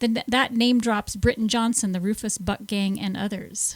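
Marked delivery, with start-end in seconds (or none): 1.9-3.0 rushed, hurried, words run together. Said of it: "I said it too fast".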